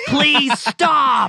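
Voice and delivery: mock shrill screaming, very high and loud. Recalling hearing the neighbor on a practice recording, retelling a neighbor's scream. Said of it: "I could hear my neighbor just screaming".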